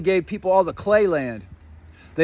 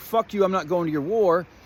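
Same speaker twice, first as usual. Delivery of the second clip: normal talking voice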